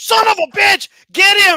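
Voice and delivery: loud, high-pitched shouting.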